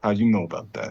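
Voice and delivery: hushed whisper. A character, asked what's in his bag, whispers back to the one who asked. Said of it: "whisper back".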